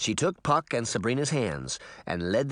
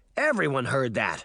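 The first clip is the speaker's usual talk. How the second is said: usual speaking voice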